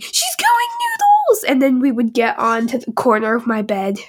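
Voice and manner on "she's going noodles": put-on, very high, squealing, shrieking scream. Retelling how the kids reacted when the dog bounced around: imitating screaming. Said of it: "We started screaming".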